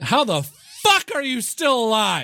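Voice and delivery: acted shrill, very high yell, swinging up and down. Describing their reaction when an opponent makes it back to the board: retelling a shout. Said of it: "I shout it".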